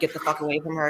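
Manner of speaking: usual speaking voice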